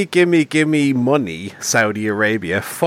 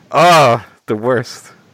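usual speaking voice

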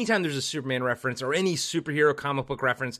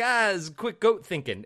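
put-on goat voice, higher pitch; 5 semitones higher than usual. Speaker quoting a bit from a loved album where the artist does the goat, goat voice. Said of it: "when he does the goat, and he's like".

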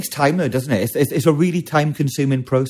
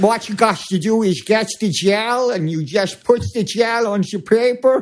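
put-on Dutch accent, much higher pitch; 7 semitones higher than usual. Retelling what a Dutch woman on YouTube said, in a Dutch accent. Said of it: "That's some good accent".

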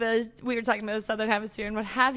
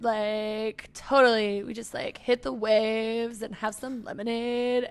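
laid-back, chilled-out stoner voice; 3 dB quieter than usual. Podcast host trying out voices when a co-host asks for some, stoner chill voice. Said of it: "Could I do like stoner chill?".

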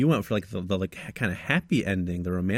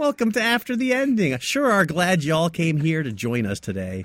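overdone put-on North Dakota accent, pitched up; 8 semitones higher, 3 dB louder than usual. Podcast host tries an American accent on the show's welcome, put-on North Dakota accent. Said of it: "Like I'm from North Dakota now".

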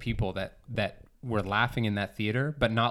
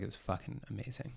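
sincere, earnest, gushing praise tone, whispered; 13 dB quieter than usual. Retelling a customer telling staff about a movie: imitating an earnest fan, no irony. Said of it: "Without a s-, hint of irony".

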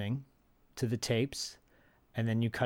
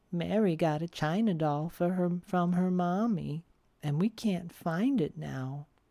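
put-on little girl voice; 6 semitones higher than usual. Retelling a story, speaker quotes what the little girl voice said, in a little girl voice. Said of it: "the little girl voice says".

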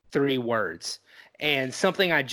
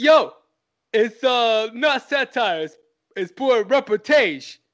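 put-on tough-guy character voice; 9 semitones higher, 7 dB louder than usual. Asked by a co-host to say a line as Rocky: Rocky voice. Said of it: "Can you say that as Rocky?".

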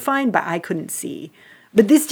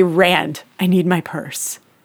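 solemn, grave, slow, weighty delivery; 2 semitones lower than usual. Retelling asking the husband for a purse in recovery: imitating own grave tone. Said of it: "I say it with such gravitas".

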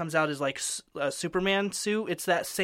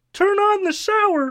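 put-on voice, pitched higher; 9 dB louder than usual. Asked by the other speaker to say a phrase in that voice: same put-on voice as before. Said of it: "could you, in that voice, say".

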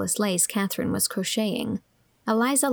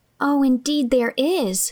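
eager, high, loud exclamation; 5 semitones higher, 6 dB louder than usual. Anne, unable to endure it in silence, cries out to Miss Andrews. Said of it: "cried Anne".

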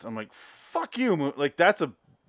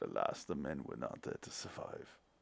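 near-whispered, hushed, breathy put-on voice; 10 semitones lower, 18 dB quieter than usual. Joking about a sad boat movie in a Werner Herzog voice. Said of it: "Why do I sound like, uh, Werner Herzog?".

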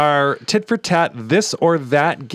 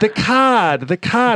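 put-on heavy Maine accent laid on thick, higher pitch; 6 semitones higher than usual. Retelling a woman's request, speaker imitates her thick Maine accent. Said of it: "thick accent in Maine".

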